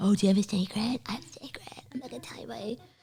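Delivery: put-on teasing, unvoiced, childish whisper.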